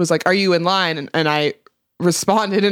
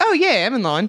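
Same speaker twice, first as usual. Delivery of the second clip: subtle put-on Australian accent with raised pitch; 5 semitones higher than usual. Retelling answering when asked if they were in line, in an Australian accent. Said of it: "I responded in an Australian accent".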